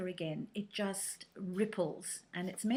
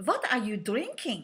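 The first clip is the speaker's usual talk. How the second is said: put-on German accent, louder; 2 semitones higher, 7 dB louder than usual. Retelling a lady's question in a café: German accent. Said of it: "please excuse the German accent".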